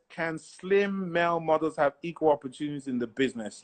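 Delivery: ordinary talk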